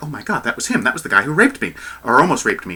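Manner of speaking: ordinary talk, nothing marked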